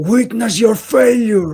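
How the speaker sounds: high, full-voice top-of-the-lungs shout. Targeting one of the sickles in the game, the character is shouting at the top of their lungs. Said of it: "as I'm shouting at the top of my lungs".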